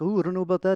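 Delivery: Liverpool accent. Discussing British accents, the speaker demonstrates in a Liverpool accent. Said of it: "there's the Liverpool accent where it's like".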